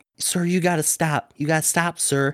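put-on little lady voice, pleading tone. Retelling a fight, imitating a little lady pleading with a man to stop.

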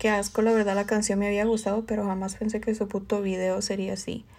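ordinary talk

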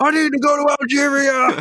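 put-on scream, pitched way up, high. Speaker acts out a man screaming at New York City, retelling a scream. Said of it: "he's kind of screaming this at New York City".

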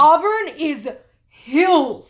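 loud, high-pitched, exasperated complaining rant.

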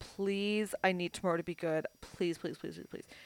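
mock pleading, very quiet. Retelling how Kayla prayed the night before a high school event, imitating Kayla praying. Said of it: "she's praying or whatever".

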